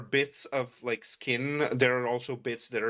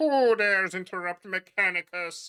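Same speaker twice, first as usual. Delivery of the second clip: muffled, radio-like voice, high and slow; 6 semitones higher, 4 dB louder than usual. A figure straightening up speaks in a muffled radio-transmission voice. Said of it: "this voice that is kind of like muffled, almost sounds like a radio transmission".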